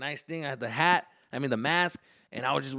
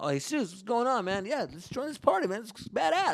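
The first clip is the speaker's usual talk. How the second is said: high put-on party dude voice; 8 semitones higher than usual. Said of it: "That's what my voice and everything".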